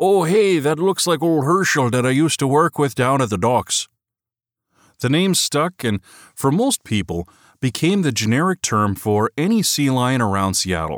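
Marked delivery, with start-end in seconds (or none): 0.0-3.9 put-on Swedish or Norwegian Scandinavian accent. Retelling an old fisherman calling out on spotting a sea lion, in a Scandinavian accent. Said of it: "in what I imagine was a typical Scandinavian accent".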